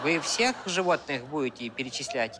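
put-on Georgian accent.

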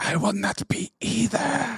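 hushed, soft, menacing hiss. Retelling a film character's line to an old foe, hissing the line. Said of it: "He hisses it".

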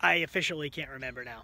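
usual speaking voice

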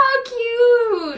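teary, crying while laughing. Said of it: "Not me crying".

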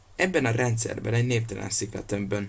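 ordinary talk

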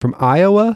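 high, loud, exaggerated mock stress on Iowa. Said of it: "You put a lot of emphasis on O".

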